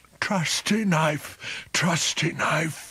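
slow, low muttering like a chant. Narrator reads the pooka's words to his knife: muttered. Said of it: "the pooka had muttered".

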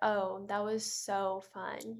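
slow, insincere, sarcastic drawl. Showing learners how to answer after a boring play: sarcastic tone. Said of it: "but not really mean it that way".

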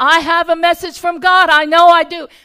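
very loud, exasperated, frustrated insistence. Retelling a stranger's words to an interpreter: imitating a frustrated man. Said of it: "he was frustrated".

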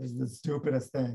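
put-on dismissive, tossed-off bratty teenage tone. Retelling Kafka rolling his eyes at a performance: bratty teenage Kafka impression. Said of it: "not in the bratty teenage way that I just".

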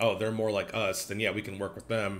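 ordinary delivery

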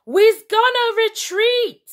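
shouting in panic. Narrating a general caught unprepared by an organised revolt: panicked shout. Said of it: "shouted the Worldstopper General, panicked".

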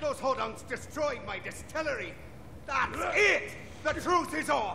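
bad, laid-on Irish accent.

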